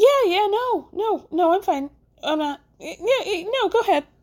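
cartoonish high voice. Speaker acts out a man answering while lying, in a high Mickey Mouse voice. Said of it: "in that high Mickey Mouse voice".

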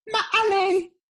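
very high, loud, squeaky mock voice.

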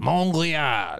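put-on French accent. Repeating a quiz answer after the quizmaster: put-on French accent. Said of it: "Your accent. That was actually quite a good impression".

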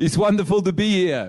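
clumsy put-on South African accent. Recreating the accent put on for dinner guests: bad South African Dr. Nick accent. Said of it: "it was a really bad accent".

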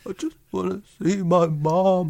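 put-on sobbing. Retelling how a man with notes in hand pleaded: imitating fake crying. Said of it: "puts on the fake crying".

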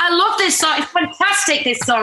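high, loud shouting. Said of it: "much like when people put headphones on".

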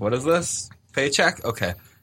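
acted bored, indifferent, half-hearted line reading. Imitating the dub cast reading their script: imitating an indifferent actor. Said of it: "didn't give it their all".

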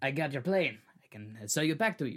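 smarmy sales-pitch voice, dripping with smarm. Speaker retelling the hijacking story voices the dictator, smarmy Castro impression. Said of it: "Why do you sound like a smarmy?".

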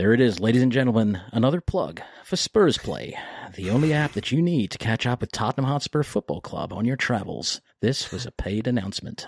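deliberately lousy, put-on American accent. Podcast host does a pretend paid announcement, in a bad American accent. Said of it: "I thought I'd drop a shit American accent".

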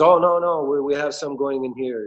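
put-on Eastern European accent. Quoting a worker at a storefront, imitating an eastern european accent. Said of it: "It's like Eastern European accent".

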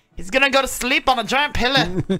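put-on Scottish accent. Quoting a movie line to a friend, in a scottish accent. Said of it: "I do a good Scottish accent".

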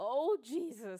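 put-on very loud, high panicked scream. Retelling own reaction to a new baby twitching after a bath: imitating own panicked screaming and crying. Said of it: "I was screaming and crying".

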